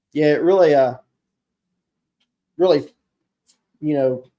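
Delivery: stuttering, stumbling, halting, tripping over words. Explaining how a grip drives the blade in a snap cut, stuttering over words. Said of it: "stuttering over my words here".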